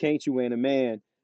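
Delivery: ordinary delivery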